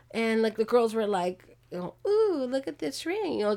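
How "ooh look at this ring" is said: high, teasing coo of mock admiration. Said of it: "just teasing her".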